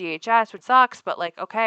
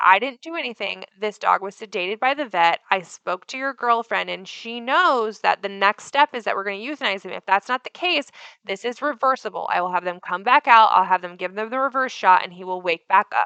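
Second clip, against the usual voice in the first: plain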